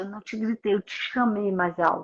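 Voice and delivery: ordinary talk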